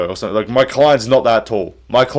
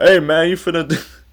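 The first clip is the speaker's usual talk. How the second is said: street-slang talk, a touch high; 6 semitones higher than usual. Imagining a fighter defending someone in court: imitating Joaquin Buckley. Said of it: "if this man is trying to defend you and go".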